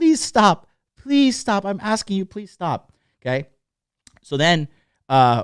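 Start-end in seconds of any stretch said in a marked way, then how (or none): 0.0-2.9 put-on shrieking, high, full-voiced, polite pleading tone. Retelling a girl begging a guy to stop, imitating a woman shrieking. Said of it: "shrieking at the top of her voice".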